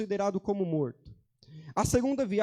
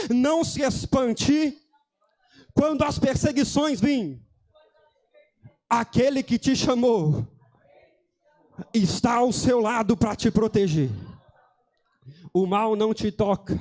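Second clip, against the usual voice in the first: loud, raised, proclaiming prophet voice; 7 dB louder than usual. Showing listeners what to tell the brother beside them: prophet voice. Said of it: "Olha com voz de profeta e fala assim".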